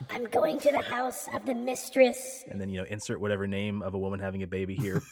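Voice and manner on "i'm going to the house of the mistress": very high, drawn-out, slow hissing voice. Storyteller voicing a baby-stealing woman answering a man who stops her at night, hissing. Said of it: "She hisses at him and she says".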